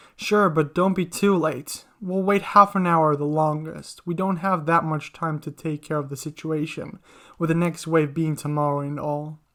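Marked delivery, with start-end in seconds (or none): none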